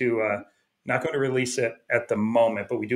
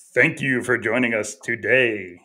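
low radio announcer voice; 3 dB louder than usual. A co-host shows a guest how to sound on air, in a low radio voice. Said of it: "you gotta have that low radio voice".

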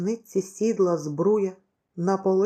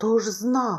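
uneasy, troubled, anxious, worried voice; 2 semitones higher than usual. A fugitive answers a companion's complaint after a plane spots them, anxiously. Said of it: "тривожно відказав Михайло".

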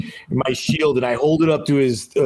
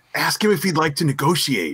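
fake, theatrical stage whisper; 2 semitones higher than usual. In a game, a character right behind another prompts him, in a fake stage whisper. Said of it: "in a fake stage whisper".

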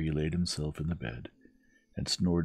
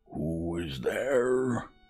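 rough, gruff, fake old woman voice; 2 semitones higher than usual. Narrator voices the wolf answering a knock at grandmother's door, gruff wolf imitating grandmother. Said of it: "His voice was so gruff".

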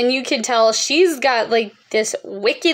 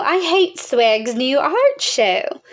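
snooty, lofty, disdainful put-on art-snob voice; 2 semitones higher than usual. Quoting a tough pop culture critic, in a mock-snobbish art snob voice. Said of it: "that's my best impression of an art snob".

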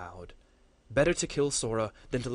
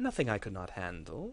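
guarded, defensive, with faint amusement; 2 semitones lower, 3 dB quieter than usual. Geron, hurt, answers Goranor's question about the complications, defensive but faintly amused. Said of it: "clearly on the defensive, but with a trace of amusement".

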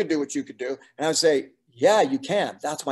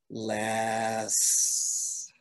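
'less' said with mock, put-on condescension; 4 semitones lower, 7 dB quieter than usual. Quoting a Discovery Canada director's words, mock-condescending 'Less'. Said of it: "just like that, condescending".

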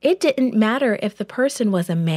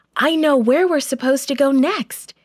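eager, excited, wide-awake, quick and pitched up; 6 semitones higher, 3 dB louder than usual. Paul wakes his sleepy companions after a vision: excitedly. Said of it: "he said excitedly".

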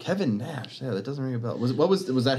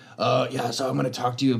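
put-on vocal fry voice. Imitating Thomas Jane while describing his vocal fry: Thomas Jane voice with vocal fry. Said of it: "Tom Jane has that, where he's like".

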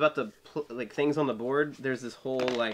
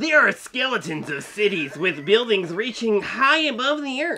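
shrill, booming, loud, high superhero voice; 9 semitones higher, 9 dB louder than usual. Taking a turn at doing voices, playing a favorite superhero, in superhero voice. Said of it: "let's do this like my favorite like superhero".

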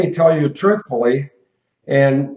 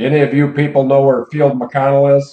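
ordinary talk

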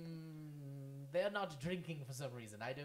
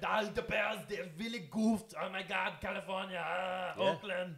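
put-on Austrian accent, higher and louder; 5 semitones higher, 10 dB louder than usual. Continuing the bit on a football team's loss: Arnold Schwarzenegger voice. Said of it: "you sound like Arnold right there".

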